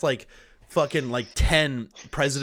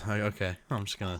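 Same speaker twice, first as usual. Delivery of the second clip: put-on resigned sighing voice, lower and quieter; 4 semitones lower, 7 dB quieter than usual. Acting out an imagined scene where Biden tells Kamala not to come: imitating Kamala sighing. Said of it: "Kamala just sighs and goes".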